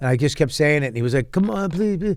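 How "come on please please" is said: high, pressing, pleading begging tone. Retelling a man begging for money on the last day: imitating a man begging. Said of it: "I had one guy begging for money".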